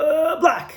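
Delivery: dazed, panicked blurt, very high-pitched. Telling a joke, voicing a confused witness answering police: acting stressed and panicked. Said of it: "stressed and panicked".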